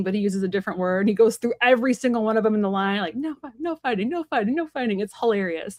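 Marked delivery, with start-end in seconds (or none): 3.1-5.0 yelling, pitched higher. Describing a Peaky Blinders scene with the gang, retelling Cillian Murphy yelling. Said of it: "he's like yelling at all his gang".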